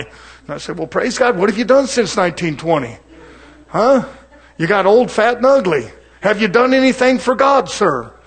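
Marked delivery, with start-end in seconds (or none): 1.4-8.0 mock teasing, needling, lightly mocking preacher voice. Speaker retells his reply to a man filled with the Holy Ghost since 1920, mocking. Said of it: "I'm mocking a little bit".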